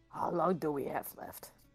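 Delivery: hushed, whispered speech. Asking a companion in character how much time remains: whispering. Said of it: "And I whisper to Zerap".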